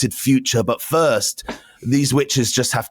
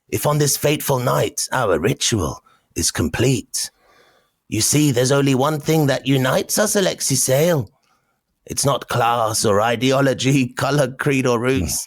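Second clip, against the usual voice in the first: put-on storybook witch voice; 3 semitones higher than usual. A narrator voices the witches addressing the listener: witch voice. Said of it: "they do a witch voice".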